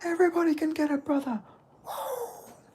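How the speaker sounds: wild, fired-up hype screaming, pitched very high. Imitating a fighter screaming at press conferences: imitating Khamzat Chimaev screaming.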